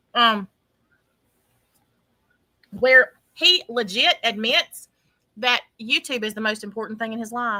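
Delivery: speaking while eating, muffled by food. Co-host tells the others about some text messages, talking while chewing. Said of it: "Sorry, y'all, I'm chewing".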